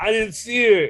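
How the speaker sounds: very high, loud dude voice. Retelling a film scene where she gets run over: doing the dude's voice. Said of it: "I do the voice for the dude".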